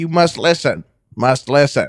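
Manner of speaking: insectoid alien voice, echoing and repeating the ending. Describing the insectoid creatures to the others, imitating the aliens' speech. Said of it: "They'll, they'll be like".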